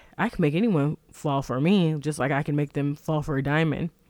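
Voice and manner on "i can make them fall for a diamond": ordinary talk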